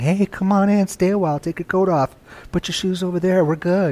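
sweet, soft, soothing, welcoming, tempting coaxing voice. Speaker acts out the voice of an angel inviting someone in, soothing, tempting angelic voice. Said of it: "It sounds very soothing. It sounds very welcoming. Very tempting".

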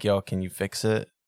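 mock deadpan, completely flat delivery. Recalling a man bringing a mangled guitar to Guitar Center, retelling a deadpan ask. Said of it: "It is just deadpan".

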